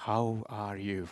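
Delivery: weak, frail, very feeble, low, barely-there voice. Recalling a man's greeting when they met, imitating a very feeble voice. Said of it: "in a very, very, very feeble voice".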